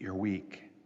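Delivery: low, hushed, barely audible half-whisper. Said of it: "Something whispers".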